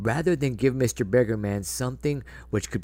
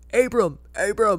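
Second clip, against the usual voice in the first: put-on very high, loud shouting reporter voice; 10 semitones higher, 5 dB louder than usual. Imagining reporters on a red carpet calling out, reporter impression calling out. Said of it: "That's my reporter impression".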